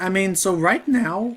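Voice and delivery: voice cracking. Someone commenting on a Game Boy Advance game as it plays: voice cracking. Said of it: "voice crack".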